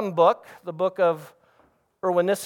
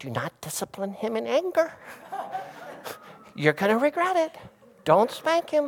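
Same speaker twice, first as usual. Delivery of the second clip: soft, hushed whisper under the breath; 2 semitones higher, 6 dB quieter than usual. Retelling a wife's warning not to spank in anger: imitating someone whispering. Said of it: "she's whispering".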